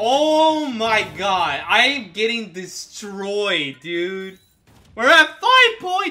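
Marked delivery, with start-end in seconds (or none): 4.9-6.1 voice breaking up into a very high yelp. Reacting to a count while getting destroyed in a game, voice cracking. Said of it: "My voice cracked".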